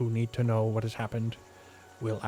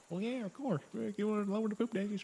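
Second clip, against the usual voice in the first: casual offhand put-on captain voice, much higher, quieter; 11 semitones higher, 7 dB quieter than usual. Retelling the captain's reply overheard from the front, casual offhand Captain Gilby voice. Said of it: "And then you just hear like".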